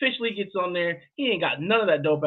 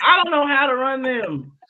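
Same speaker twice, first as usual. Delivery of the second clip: loud, put-on Southern accent; 8 semitones higher, 6 dB louder than usual. Retelling the friend's answer: put-on southern accent. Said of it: "That was my Southern accent".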